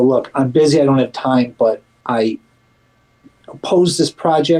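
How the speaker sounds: ordinary talk, nothing marked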